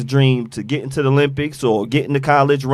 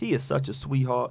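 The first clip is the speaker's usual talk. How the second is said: very light voice, lightest possible; 11 dB quieter than usual. Reading out a chat comment from Miss Barker: Miss Barker voice. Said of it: "that's my Miss Barker voice".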